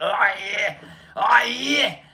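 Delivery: bad, put-on Australian accent. Mocking how everybody imitates Aussies, the speaker does a bad fake Australian accent. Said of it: "they do like that shitty accent".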